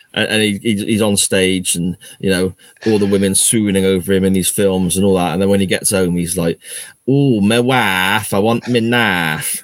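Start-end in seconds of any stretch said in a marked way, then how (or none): 7.0-9.6 put-on Burnley accent, very slowly dragged out. Joking about an actor at home, the speaker does Jared Leto in a Burnley accent. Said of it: "Jared Leto had a Burnley accent".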